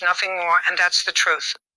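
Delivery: ordinary delivery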